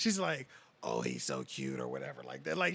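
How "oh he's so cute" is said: very low, badly damaged, wrecked voice. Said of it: "she's talking to my nephew like that".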